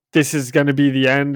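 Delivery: ordinary delivery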